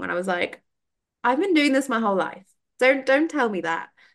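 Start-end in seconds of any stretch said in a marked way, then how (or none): 1.2-3.9 mock sassy tone, higher pitch. Retelling a reply to the instructor: imitating own sassy retort. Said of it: "sassy Taurus in me was coming out".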